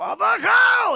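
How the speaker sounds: very loud, very high shout sweeping upward in pitch. Telling a story about a show's angry father, acting out his line as a scream going up. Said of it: "He would start low".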